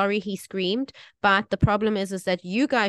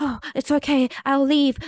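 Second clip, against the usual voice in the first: mock flustered apologetic tone, much higher, slower; 6 semitones higher, 3 dB louder than usual. Retelling a friend's reply after a complaint to the manager, imitating her flustered apology. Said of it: "she was so apologetic".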